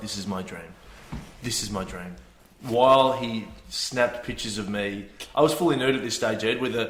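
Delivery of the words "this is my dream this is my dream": very quiet, murmured half-whisper. Retelling how a photographer half-whispered to himself while taking pictures: imitating someone half-whispering. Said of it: "he was whispering to himself".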